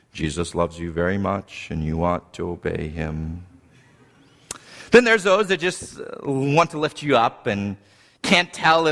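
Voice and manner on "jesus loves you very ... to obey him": very low, soft, level, droning monotone. Describing kinds of preachers, the speaker demonstrates a flat monotone reading. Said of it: "the flatliners who read everything".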